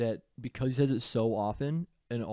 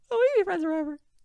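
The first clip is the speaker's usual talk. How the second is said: puppet voice, much higher pitch; 7 dB louder than usual. Showing how chat messages get read aloud on stream, in an Elmo voice. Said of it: "a little Elmo voice going Dubbin".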